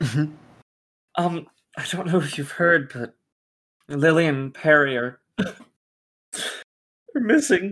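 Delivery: weeping, tearful voice while speaking. In a scene, a character speaks to the children's teacher, crying. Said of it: "Sorry for crying".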